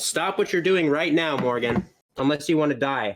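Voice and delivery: put-on character voice, high-pitched and yelled. Voicing a character who threatens Morgan in combat: yelling a threat in character. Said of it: "I'm gonna yell".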